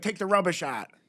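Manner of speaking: put-on western Pennsylvania accent. Quoting what the speaker's mom says at home, imitating mom's Yinzer accent. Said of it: "the Yinzer accent".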